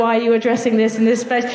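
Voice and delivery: ordinary talk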